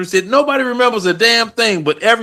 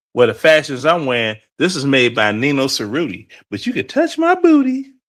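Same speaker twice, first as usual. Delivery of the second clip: playful, swooping, sing-song put-on voice; 6 semitones lower than usual. Showing how Stanley would talk: Stanley impression. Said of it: "Stanley sounds like the type of person that be like".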